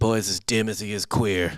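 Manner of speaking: slow put-on Saint Louis accent, dad voice. Retelling what the father said to the mother: imitating a dad in Saint Louis accent. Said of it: "I do it in a Saint Louis accent".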